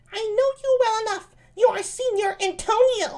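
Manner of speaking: put-on lady voice, pitched very high. Reading Ursula's lines from a Shakespeare play aloud: high-pitched Ursula voice. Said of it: "I mean high-pitched voice".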